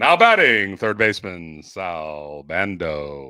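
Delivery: deep ballpark announcer voice. Imitating the old Oakland A's announcer calling a batter: Roy Steele PA announcer voice. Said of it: "there you go. You got it".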